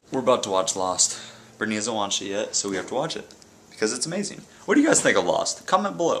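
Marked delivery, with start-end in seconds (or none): 4.6-5.6 rushed, very fast, chatty talking. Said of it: "Why are you talking so fast?".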